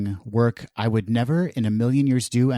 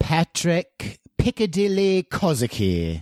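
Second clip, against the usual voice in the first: high, gamely attempted, fake British accent; 7 semitones higher than usual. Introducing himself on the show with a put-on british accent. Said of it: "with an accent and everything".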